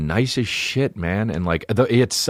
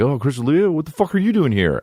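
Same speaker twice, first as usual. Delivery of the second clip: mock-drunk voice, much higher pitch; 5 semitones higher than usual. Speaker retells drunk people coming up to him at a bar, imitating a drunk person. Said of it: "drunk people were like".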